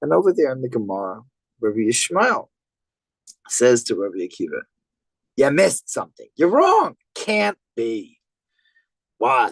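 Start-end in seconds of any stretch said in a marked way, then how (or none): 5.4-8.2 put-on, swooping New York accent. Quoting a rabbi's challenge from the Gemara: New York accent. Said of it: "said this with a New York accent".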